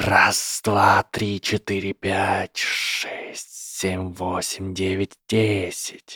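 every word hissed, snake-like voice. A narrator reads a character addressing a snake, hissing. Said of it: "и прошипел".

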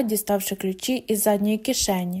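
ordinary delivery

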